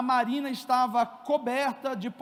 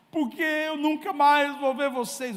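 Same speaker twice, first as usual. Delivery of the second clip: put-on weepy child voice, crying through tears; 2 semitones higher than usual. Father retelling what his son Davi answered him, imitating Davi crying. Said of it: "por que que você está chorando?".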